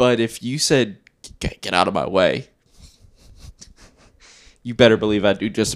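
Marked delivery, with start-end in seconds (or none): 1.4-2.5 firm tone in a buddy-like manner. Imitating Hoyt telling someone to get out of the way: Hoyt impression. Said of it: "the best Hoyt impression".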